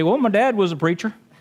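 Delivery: put-on Minnesotan accent. Father imagining how his kids might talk one day, Minnesotan accent. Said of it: "They'd more talk kind of like a Minnesotan accent and say".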